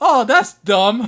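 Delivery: shrill, very high, very loud outburst. Retelling a duel against Flarius, imitating Flarius. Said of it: "And then he reads it".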